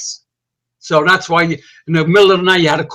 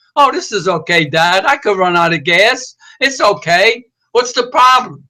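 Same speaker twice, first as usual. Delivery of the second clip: airy, breezy, put-on nonchalance; 2 semitones higher than usual. A father recounting what his kid said back then, mimicking a carefree reply. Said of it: "like it was nothing".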